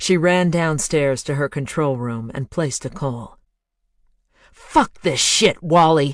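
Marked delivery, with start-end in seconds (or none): 4.5-6.2 loud, enraged snarl. A woman calls on her headset and snarls at the disguised voice that answers: snarling. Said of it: "She snarled into the headset".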